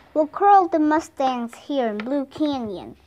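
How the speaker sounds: ordinary delivery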